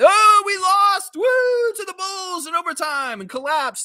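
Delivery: mock very high, gleeful, drawn-out jubilant cheer. Imitating fans who cheered a loss: mock jubilant voice. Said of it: "Some people were jubilant".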